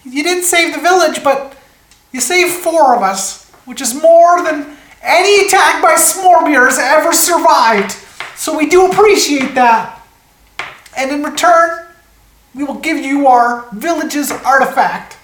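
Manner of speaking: very high, tiny gnome villager voice. A game master voices a gnome villager after an attack, in a small gnome villager voice. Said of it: "these like little 3-foot creatures. ... And Sven goes, no. He kind of like looks around the damage causes his village. And there's just three gnomes that remain. ... You hear this small voice".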